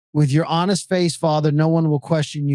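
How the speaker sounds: normal talking voice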